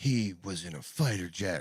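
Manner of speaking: very slow, drawn-out, totally straight-faced, dead serious. Imitating Whoopi describing a fighter jet video: Whoopi Goldberg impression, serious. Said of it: "wait till you listen to Whoopi being like".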